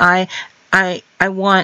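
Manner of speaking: put-on sheepish stammering. Retelling what a man said in the car: imitating a sheepish stammer. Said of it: "he's very sheepish".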